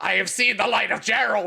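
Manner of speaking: crazed, unhinged, manic, psychopathic tone. Retelling how she delivered a prank line to her mother: mimicking manic, psychopathic delivery. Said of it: "in this like incredibly manic and psychopathic way".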